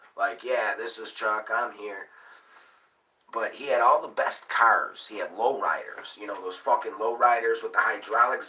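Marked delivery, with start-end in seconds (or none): 0.4-2.1 put-on mechanical robot computer voice. Speaker imitating the robot voice that answered a man's phone. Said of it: "a robot voice would answer you".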